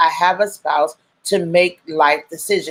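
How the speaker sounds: plain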